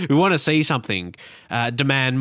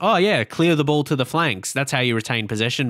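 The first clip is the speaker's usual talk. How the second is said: mock-sarcastic, mimicked sarcasm. Quoting someone who mocked a football phrase, mimicking a sarcastic remark. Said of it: "trying to say it in a sarcastic way".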